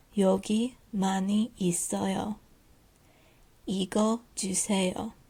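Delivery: very slow, careful reading, one phrase at a time. Teacher reads a shop dialogue aloud for learners to repeat, reading very slowly. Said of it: "I'm going to read this slowly".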